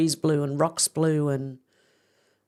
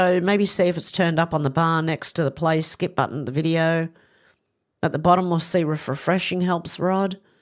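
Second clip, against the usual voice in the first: usual speaking voice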